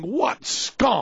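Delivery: plain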